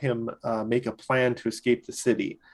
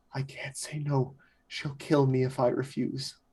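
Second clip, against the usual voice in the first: frightened, panicked, hushed whisper, close; 2 semitones higher, 5 dB quieter than usual. Game master voicing a man who leans in close to a player's character: panicked whisper. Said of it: "and just kind of whispers".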